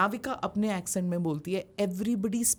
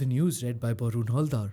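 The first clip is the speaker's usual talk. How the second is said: put-on old-style, formal radio news announcer voice; 7 semitones lower than usual. Showing how radio news readers were trained to speak: imitating old trained newsreader voice. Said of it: "So you spoke like this".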